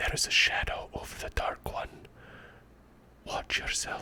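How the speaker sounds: secretive, very quiet, breathy whisper. A narrator voicing a man who pulls the listener close, whispering in their ear. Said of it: "he whispers in your ear".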